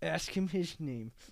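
put-on through gritted teeth. Retelling what a mom told her son, through gritted teeth. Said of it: "with the gritted teeth".

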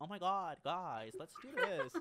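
put-on loud, swooping sorority-girl Valley girl accent. Quoting the sorority girl character from a show, in a Valley girl voice. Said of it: "but then he changed it to, like, a Valley girl".

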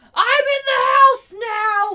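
put-on drunk, scared yell, very high, loud, shrill. Joining in retelling the movie scene: imitating a drunk, scared shout. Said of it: "classic, like, drunk, scared thing".

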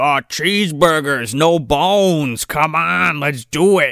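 very slow, drawn-out critter voice. Retelling how the big leader creature rears up: imitating critter speech. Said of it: "starts talking in fucking critter speech".

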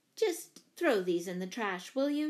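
usual speaking voice

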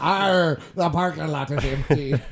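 stage pirate voice, dragged out very slow. Retelling another speaker's line as a pirate: imitating a pirate voice. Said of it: "sounds like a pirate".

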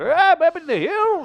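put-on high, slow old gold-prospector character voice. Chatting about Prospector voices, a speaker does Will Ferrell's old Prospector voice. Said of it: "old Prospector voice".

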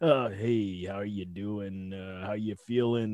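very low, slow, lifeless monotone drone. Imitating how a host sounds when interviewing: imitating a flat, monotone host. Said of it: "it's like he goes into this monotone".

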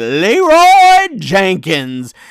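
slow, loud, drawn-out battle scream.

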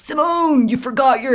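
mock roaring voice. Retelling a friend calling out in the queue: imitating a friend roaring. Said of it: "roaring at you in the queue".

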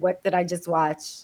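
ordinary delivery

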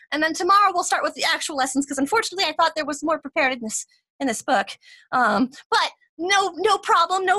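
excited, keen voice, high and quick. Game master voicing a newer teacher addressing the class, excited new teacher. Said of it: "You see her kind of walk in just kind of excitedly. She's one of those newer teachers".

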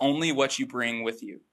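normal talking voice

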